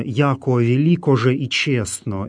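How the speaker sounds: normal talking voice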